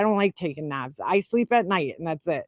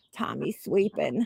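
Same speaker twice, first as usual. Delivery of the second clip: odd, creaky, rough, croaking cartoon voice; 3 semitones lower, 4 dB quieter than usual. Retelling how he answered the phone: Elmer Fudd kind of voice. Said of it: "That's how he used to talk".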